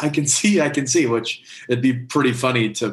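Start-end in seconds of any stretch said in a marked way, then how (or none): 0.0-1.1 mock yell, pitched higher. Retelling a story of a boy running home: imitating someone yelling. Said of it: "he's yelling".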